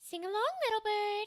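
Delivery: gentle, nasal fairy-tale princess voice.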